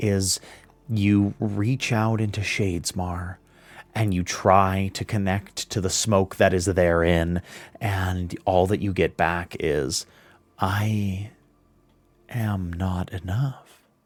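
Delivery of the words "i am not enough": ethereal, otherworldly, very slow, drawn-out voice. Describing reaching into Shadesmar, voicing the reply heard there in an ethereal voice. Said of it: "You hear this like ethereal voice say".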